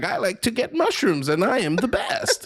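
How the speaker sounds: very high, swooping, badly dubbed cartoon hero voice. Retelling a dubbed show intro: imitating a badly dubbed Sonic costume contestant. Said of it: "someone dressed in, like, a Sonic uniform".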